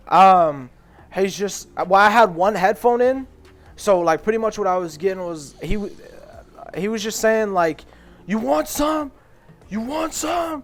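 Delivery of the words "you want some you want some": put-on top-of-lungs, very high, angry screaming. Retelling what a man screamed at the top of his lungs: retelling a man screaming. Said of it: "he's screaming".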